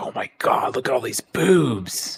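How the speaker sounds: words broken up by giggles. Retelling looking at search results with cousins: imitating giggling while talking. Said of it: "we're all just giggling".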